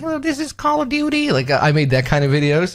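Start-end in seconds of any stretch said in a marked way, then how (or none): 0.0-1.3 very high, squeaky put-on voice. Recalling old gameplay videos narrated in a squeaky voice. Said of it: "with a squeaky voice, like".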